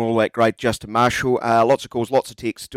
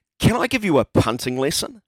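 mock condescending, patronising talking-down tone; 3 semitones higher than usual. Reading out a listener's text: mock condescending reading of Carlos. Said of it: "read it as condescending as comes across".

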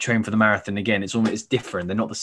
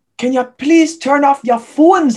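put-on loud, shrill scream in a broad Geordie accent; 10 dB louder than usual. Retelling what some guy screamed during the show, retelling a scream in geordie accent.

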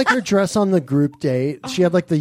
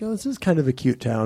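ordinary talk, nothing marked

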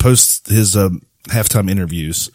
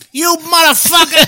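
very high-pitched tough-guy jabbing delivery. Showing another speaker the voice you do well, in a Joe Pesci impression. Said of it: "You do a good Pesci".

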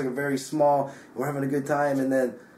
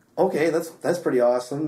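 ordinary delivery

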